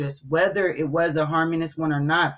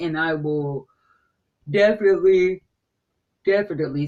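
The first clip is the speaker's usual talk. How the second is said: speaking through a yawn; 3 dB louder than usual. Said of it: "sorry, I'm yawning".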